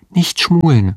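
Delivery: whispered with a giggle. In a novel, a woman turns to the spellbound man and whispers with a giggle. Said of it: "flüsterte sie kichernd".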